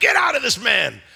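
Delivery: put-on, forceful, intense delivery from full lungs. Speaker retelling a Bible scene, acting out a command to a spirit, intense. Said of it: "it's an intense moment".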